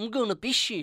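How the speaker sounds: Kiwi accent, "bash" as "bish". Joking about a mispronounced word: new zealand accent. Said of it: "Sounds like a New Zealander saying bash".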